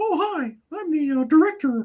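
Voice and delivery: very high squeaky cartoon voice. Showing off being able to do a higher voice: Mickey Mouse voice. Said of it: "So the Mickey Mouse voice".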